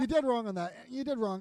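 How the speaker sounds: ordinary delivery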